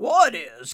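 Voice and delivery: roaring, loud, full-throated bellowing. Reading fiction, a character answers another's reassurance with a question, bellowing. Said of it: "Cumulo bellowed".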